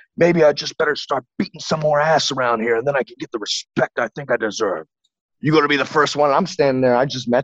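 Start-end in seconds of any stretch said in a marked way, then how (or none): 0.2-6.3 loud, menacing, bullying, intimidating tone. Retelling what a man he just met said to his face, imitating a loud intimidating man. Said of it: "He was always loud and just intimidating".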